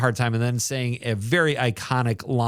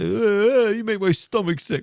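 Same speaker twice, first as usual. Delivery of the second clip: put-on tough greaser voice, higher; 10 semitones higher, 3 dB louder than usual. Quoting a favourite movie line to friends: imitating Dally from The Outsiders. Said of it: "But that laugh and that, like".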